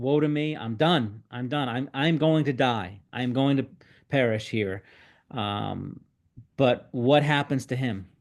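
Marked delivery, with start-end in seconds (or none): none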